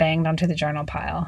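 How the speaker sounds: ordinary delivery, nothing marked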